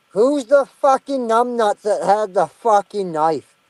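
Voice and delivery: heavily slurred speech. Speaker retells going out to confront whoever had the knife: retelling slurring as much as possible. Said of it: "Just as fucking slurring my speech as possible".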